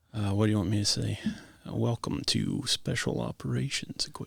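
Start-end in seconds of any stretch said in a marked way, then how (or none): 1.7-4.2 breathy, whispered, hushed radio announcer voice. Asked by the interviewer to try a radio voice, in a radio announcer voice. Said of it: "Let me hear your radio voice".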